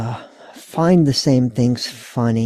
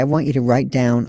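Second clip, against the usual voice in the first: ordinary talk, nothing marked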